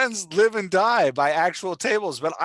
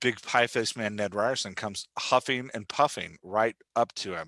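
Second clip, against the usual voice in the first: plain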